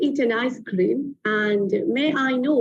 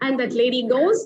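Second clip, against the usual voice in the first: usual speaking voice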